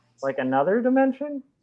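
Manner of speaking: mock, high, rising, sing-song echo of another dimension.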